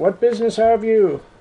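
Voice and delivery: high, yelled-out call. A game narrator voices a Sentinel calling out to the players, yelling out. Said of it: "Yells out".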